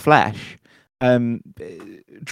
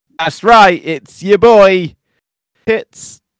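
mock jovial announcing, higher and louder; 8 semitones higher, 10 dB louder than usual. Announcing the recording after being asked to: put-on convivial announcement. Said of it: "announce it in a really convivial way".

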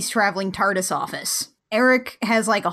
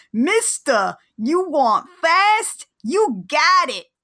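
bad put-on Brooklyn accent, pitched up; 6 semitones higher than usual. Recapping an episode, the speaker quotes the cabbie character in the worst brooklyn accent. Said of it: "doing the worst Brooklyn accent".

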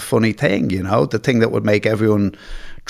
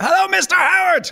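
put-on very high, hollered shout. Retelling a friend greeting a father he thought was deaf: imitating someone shouting. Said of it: "he shouts".

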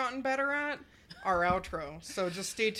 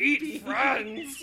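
loud, high-pitched, caveman-style voice; 6 semitones higher, 5 dB louder than usual. Saying the outro line as a joke: Neanderthal Yoda voice. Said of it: "some kind of Neanderthal Yoda".

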